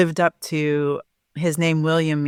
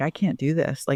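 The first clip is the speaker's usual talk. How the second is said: mock-sobbing, bawling; 4 dB quieter than usual. Retelling a moment late in pregnancy, imitating herself bawling. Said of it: "I just started bawling".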